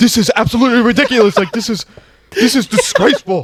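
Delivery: very high, near-tearful, ranting voice. Retelling a sports analyst on draft coverage, imitating someone about to cry. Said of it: "he was basically about to cry".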